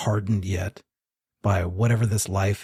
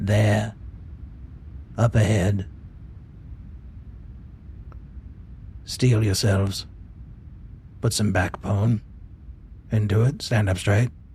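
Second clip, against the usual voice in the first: hushed whisper under the breath. A game master voices a fox speaking to the party on the street, whispering. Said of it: "he kind of whispers to you".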